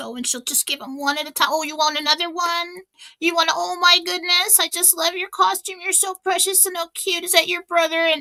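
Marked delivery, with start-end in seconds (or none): 1.5-8.0 doting, adoring, high gushing coo. Retelling how one of the girls greets costumed kids at the door: imitating Katie gushing over kids. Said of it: "Katie's like this 'cause she just can't stand it".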